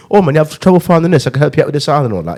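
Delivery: fake British accent for fun. Retelling how you'd talk to a customer, in a put-on British accent. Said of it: "I used to use the British accent for fun".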